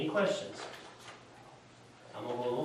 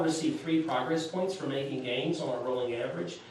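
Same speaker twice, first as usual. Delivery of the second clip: ordinary talk, nothing marked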